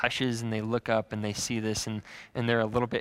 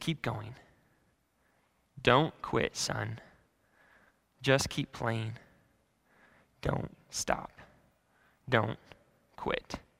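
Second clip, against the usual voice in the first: put-on whisper, quieter; 5 dB quieter than usual. Retelling a story where someone whispers encouragement into a boy's ear: retelling a whisper. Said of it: "he whispers into the boy's ear".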